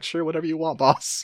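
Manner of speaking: mock smug tone. Recapping a game, Handler Walter answers the squad: mock-smug Handler Walter. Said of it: "Handler Walter is smugly like".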